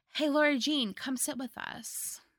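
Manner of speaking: high, fake friendly, suspiciously overly nice voice. Speaker recaps a movie scene where a mean girl's friend invites Laura Jean, mock suspiciously nice. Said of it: "being suspiciously nice".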